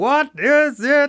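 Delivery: acted, very high, shouted Dutch accent. Recalling a man telling them off from the shower, retelling a yell, dutch accent. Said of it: "his Dutch accent coming out".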